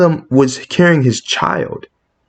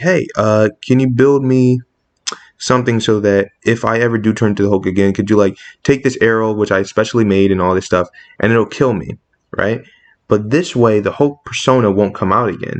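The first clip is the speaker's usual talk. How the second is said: ordinary delivery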